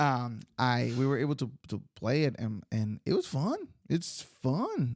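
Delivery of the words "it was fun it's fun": genuinely surprised, high, swooping sing-song. Recalling playing a simple card game, surprised tone. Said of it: "I don't know why I sound so surprised".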